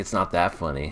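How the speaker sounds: ordinary talk, nothing marked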